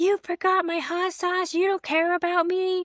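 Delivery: high-pitched, shrill, enraged, furious screaming yell. Speaker retelling how her husband screamed at her, imitating angry screaming. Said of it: "my husband starts screaming at me".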